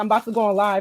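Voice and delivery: ordinary talk, nothing marked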